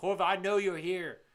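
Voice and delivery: put-on restrained yelling. Retelling a game moment from a window: imitating Pendleton yelling. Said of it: "He's yelling, like".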